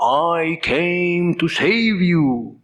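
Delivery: put-on very slow, strong Indian accent, each word weighted. Quoting Prabhupada in America in his English pronunciation: Prabhupada's Indian accent. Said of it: "His English pronunciation, you know".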